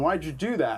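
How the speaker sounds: ordinary delivery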